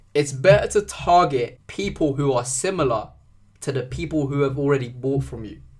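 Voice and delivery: slow, deliberate, carefully spelled-out delivery. Explaining ad audience targeting, repeating the point, said slowly. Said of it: "Let me say that slowly".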